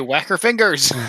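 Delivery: small, mild yell, held back. Player wishing for a druid spell calls it out, yelling.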